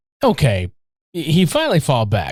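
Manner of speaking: ordinary talk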